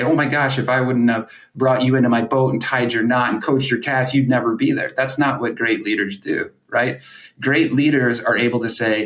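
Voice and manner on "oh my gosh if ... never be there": ordinary delivery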